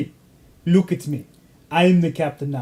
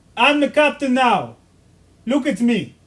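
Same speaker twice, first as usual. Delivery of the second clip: high, put-on Nigerian accent as a pirate captain; 7 semitones higher than usual. Speaker quoting a pirate movie line to the others, in a nigerian accent. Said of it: "what accent are you doing?".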